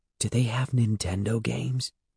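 hushed, careful, wary half-whisper. [name] asks Andy in the silent, empty store, half-whispering.

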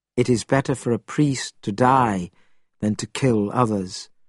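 plain

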